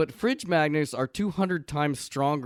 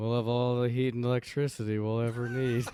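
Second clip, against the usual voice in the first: put-on sleepy, drowsy male voice. Recapping a scene, the speaker quotes a guy: mock-sleepy voice. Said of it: "in the sleepiest voice possible".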